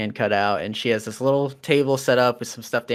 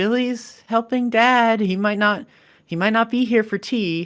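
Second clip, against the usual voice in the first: shaken, unsteady, very high-pitched voice; 11 semitones higher, 4 dB louder than usual. A narrator voices someone answering from the kitchen, in a shaken voice. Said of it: "a shaken voice come from the kitchen".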